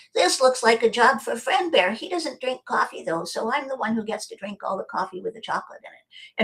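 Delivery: put-on kids' cartoon bear character voice. Describing how they suddenly switch voices mid-talk, doing Friend Bear cartoon voice. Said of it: "I will talk like Friend Bear".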